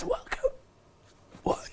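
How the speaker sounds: voice all but gone, barely there. Retelling opening a seminar on the third day of boot camp, imitating a lost voice. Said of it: "Voice gone".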